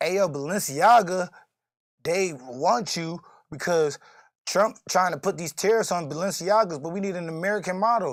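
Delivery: plain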